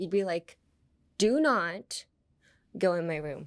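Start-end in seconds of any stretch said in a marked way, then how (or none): 1.2-3.5 heavy stress on "do not", followed by a short pause. Telling someone to keep out of your room: stress on do not, then pause. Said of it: "Like emphasize do not. And then um, have like a little pause after it".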